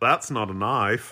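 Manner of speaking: put-on, fake Australian accent. Joking about suddenly becoming Australian: put-on Australian accent. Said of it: "I just became Australian".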